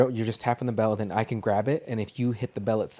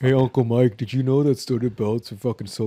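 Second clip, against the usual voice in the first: mock deep teenage voice; 4 dB louder than usual. Imitating a teenage nephew asking his uncle a question: imitating nephew's deep voice. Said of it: "he's just a deep voice".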